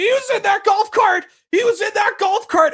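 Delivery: put-on very high, shrill, insistent screaming. Retelling what another person screamed during a wrestling segment: imitating someone screaming. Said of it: "Shivani is screaming".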